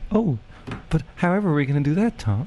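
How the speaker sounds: put-on high, funny girlish voice. Playing the girl in a scene with a friend, in a funny girl voice. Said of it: "doing a funny voice to me".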